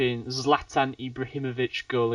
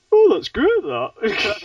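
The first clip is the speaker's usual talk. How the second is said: put-on, very high, very loud, sing-song Brummie accent; 10 semitones higher, 10 dB louder than usual. Showing how accents change from London to Birmingham: Birmingham accent. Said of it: "pick up a different accent".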